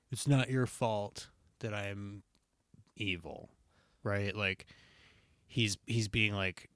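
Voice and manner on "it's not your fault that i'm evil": petulant, sulky, put-upon tone. Retelling a scene where Anakin answers his mentor: petulant Anakin voice. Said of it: "in, like, a really, like, petulant Anakin style way go".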